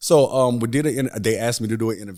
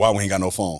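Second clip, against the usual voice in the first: play-acted, annoyed, irritated grumbling and fussing. Speaker retells Tay asking about the landline phone, imitating Tay fussing. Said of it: "That do sound like I was fussed".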